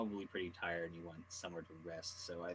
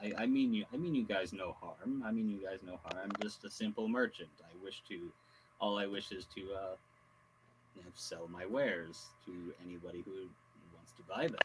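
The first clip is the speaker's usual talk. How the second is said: ordinary delivery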